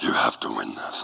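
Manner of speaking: deep, breathy voice dropped to a whisper. Retelling what their mom told them, the speaker imitates mom's deep voice. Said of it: "and her voice got deep".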